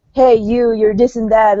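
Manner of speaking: normal talking voice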